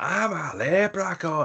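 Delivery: put-on Scottish accent. Retelling Wayne's flashlight ghost-story bit in a Scottish-sounding Leprechaun voice. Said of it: "he's doing more of a Scottish accent than an Irish one".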